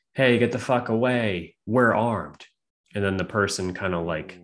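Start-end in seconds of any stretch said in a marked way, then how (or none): none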